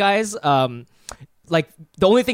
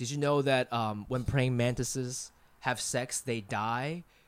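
acted deadpan, flat, low, very quiet, dead-level; 6 semitones lower, 13 dB quieter than usual. Retelling a guy's remark while he shows a mantis picture, imitating deadpan delivery. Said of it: "he said it like in his deadpan voice".

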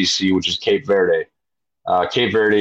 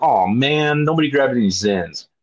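sarcastic pitched-up remark; 5 semitones higher than usual. Telling a story about friends, quoting a sarcastic remark one of them made. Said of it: "Will sarcastically says".

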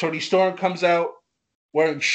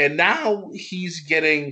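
cracked, breaking voice, cracking mid-phrase. Speaker praising a wrestler's rise, voice cracking mid-sentence. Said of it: "my voice is cracked for a second".

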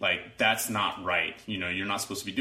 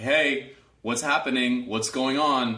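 firm, loud, commanding and authoritative voice; 4 semitones higher, 5 dB louder than usual. Describing how they question the two people involved; authoritative, speaking loudly. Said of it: "I will inquire with an authoritative voice".

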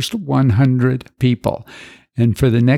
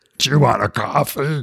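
rough, rasping, gravel-throated voice. Retelling a little guy offering coffee, in a gravelly voice. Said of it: "he said with a gravelly voice".

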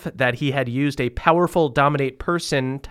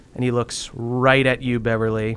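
ordinary talk

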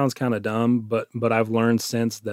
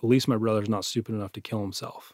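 quiet muttering under the breath; 5 dB quieter than usual. Retelling what a friend said while walking away after an argument: imitating muttering under his breath. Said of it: "under his breath as he's walking away".

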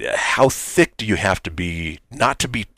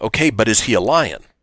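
plain

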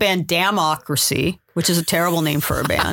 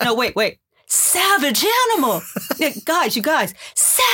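mock mic-blowing sound, loud, insistent, pushy pleading; 7 semitones higher than usual. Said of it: "hope I don't blow out the microphone when I do my impression".

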